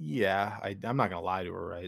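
ordinary delivery

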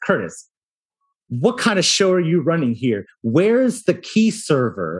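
exasperated, annoyed, irritated tone. Retelling a bad-tempered visitor's demand: imitating an annoyed person. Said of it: "she was already in a fantastic mood, sarcasm".

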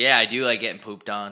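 plain

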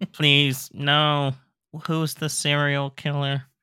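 flat, lifeless, badly dubbed movie delivery. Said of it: "does not portray, like, the people in panic mode".

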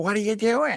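grouchy, very high-pitched voice. Describing a baseball movie's bad dude, doing a kind of grouchy Timothy Busfield character voice. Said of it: "kind of grouchy".

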